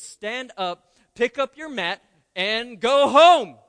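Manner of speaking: very loud emphatic voice. Reading scripture aloud, giving Jesus's words to the paralyzed man in a raised voice. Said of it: "I had to raise my voice".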